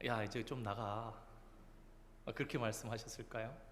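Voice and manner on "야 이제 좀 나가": very soft, hushed, mild, gentle reproachful tone. Asking whether Jesus rebuked a demon this way, a gentle, soft rebuke. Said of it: "살살 꾸짖으셨겠습니까?".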